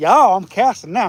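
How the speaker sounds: put-on Southern accent, drawled throughout, drawled y'all. Imitating a fishing partner's joke line: imitating a friend's southern accent. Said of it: "He's just like".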